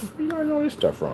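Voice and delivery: very high-pitched, baffled-sounding voice. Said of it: "You're like".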